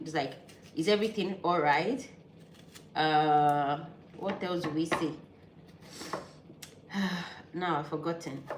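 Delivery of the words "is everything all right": ordinary talk, nothing marked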